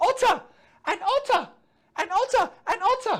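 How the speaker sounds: mock high shout, repeated over and over. Reading a story aloud, voice a character who suddenly shouts, shouting. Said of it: "And then he shouts".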